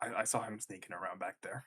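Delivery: quiet, breathy half-whisper. Playing a character who half-whispers a warning to a companion: half-whispering to Talos. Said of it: "whispers to Talos".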